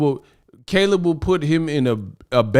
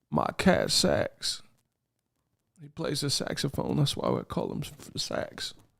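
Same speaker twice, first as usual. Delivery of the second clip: hushed, soft, shaky, breathy voice; 13 dB quieter than usual. Mocking a boxer's interview voice: Bill Clinton voice. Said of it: "sounding like Billy C. Clinton".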